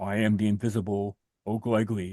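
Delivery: low, heavy, deep male baritone voice. Retelling a strange phone call, the speaker voices the caller in a deep baritone male voice. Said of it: "this deep baritone male voice saying".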